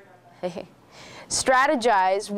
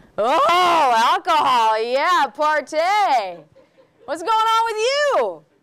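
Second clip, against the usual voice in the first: loud, very slow, sneering sarcastic sing-song, drawn-out "Oh"; 7 semitones higher, 5 dB louder than usual. Showing how not to discuss alcohol with a student, in a mocking, sarcastic tone. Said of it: "Discuss with neutral tone, no sarcasm".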